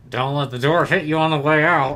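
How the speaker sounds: words forced out through clenched teeth, jaw locked. Seeing everyone off as they leave, voicing Crocs: Crocs voice through clenched teeth. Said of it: "Through clenched teeth".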